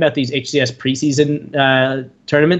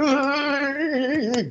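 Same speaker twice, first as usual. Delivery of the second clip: high, mock berserk gamer voice.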